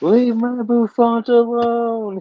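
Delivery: mock shrill, very high, drawn-out screeching scream. Acting out a tiny creature running around, imitating someone screaming. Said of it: "running around screaming".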